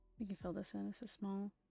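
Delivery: flat monotone voice. Filling something in while trying to focus, monotone voice. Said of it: "I don't mean to sound so monotone".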